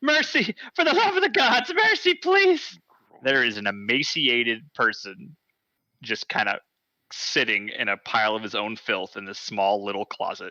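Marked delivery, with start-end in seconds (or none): 0.0-2.8 shrill, terrified, very high screeching voice. A haggard young man recoils from the opened door and begs; screeching plea. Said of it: "as he screeches".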